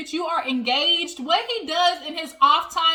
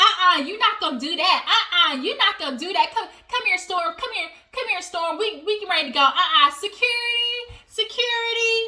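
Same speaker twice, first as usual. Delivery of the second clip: over-the-top dramatic outburst, big and extra; 3 semitones higher than usual. Retelling a reality show scene, imitating Portia being extra. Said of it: "Portia being extra".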